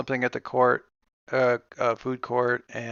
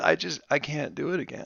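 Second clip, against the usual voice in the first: acted weepy, half-crying voice, close to tears; 2 semitones higher, 8 dB quieter than usual. Retelling what she said while kinda crying: imitating someone crying. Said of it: "kinda crying, and she says".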